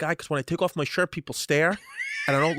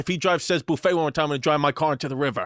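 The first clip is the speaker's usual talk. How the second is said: normal talking voice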